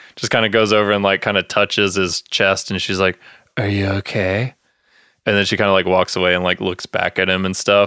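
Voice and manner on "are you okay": exaggerated flirtatious, sympathetic tone, laid on very thick. Retelling a party scene, quoting the host touching his chest: imitating flirty concern laid on thick. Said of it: "laying it on super thick".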